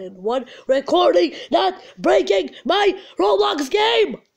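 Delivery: loud, high angry yell. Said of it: "Why am I yelling?".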